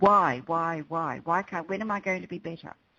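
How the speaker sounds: distressed, begging, upset outburst. Retelling a client's phone call, imitating an upset voice. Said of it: "she started going into the story".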